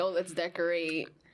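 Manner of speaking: plain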